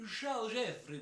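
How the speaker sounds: syrupy, smeared, drawn-out Sicilian accent, very high and loud. Showing how Sicilians speak Italian: drawn-out goopy Sicilian accent. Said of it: "they say it so molassesy and so goopy".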